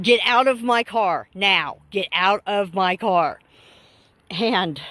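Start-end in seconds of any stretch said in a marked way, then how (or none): none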